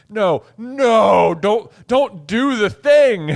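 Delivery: pleading, very slow, desperate, "no" stretched out. Acting out a character seeing the cat appear again: imitating Hermione's desperate voice. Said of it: "I can hear the desperation in Hermione's voice".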